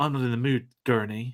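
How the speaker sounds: put-on weepy, tearful voice. Imitating a film scene: imitating Paul Atreides weeping. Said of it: "some of the Paul, like, weeping stuff".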